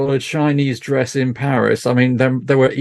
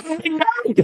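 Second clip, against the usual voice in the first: put-on very high, fed-up, over-it teenager voice; 3 dB quieter than usual. Quoting a favorite film line: fed-up teenager tone. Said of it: "said in the tone of voice of every teenager".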